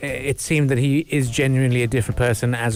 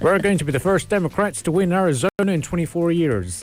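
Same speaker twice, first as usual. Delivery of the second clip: put-on American accent, pitched up; 6 semitones higher than usual. Trying a line while told the accent isn't working: put-on American accent. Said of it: "Your American accent is not working".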